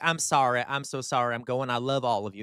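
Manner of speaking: put-on petulant, sulky tone. Before playing a clip, mocking his talk to border patrol: mocking Mayflower Kid's pissy talk. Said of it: "he gave a little pissy talk".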